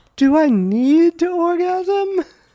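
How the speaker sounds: put-on lady voice, very high, slow falsetto. Impersonating women asking questions, in a put-on high lady voice. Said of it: "I will do my best to impersonate these women".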